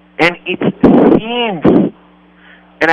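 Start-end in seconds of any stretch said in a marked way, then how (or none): 0.5-1.9 "seems" stretched slow and high, leaned on hard. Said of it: "I want to emphasize the word seems".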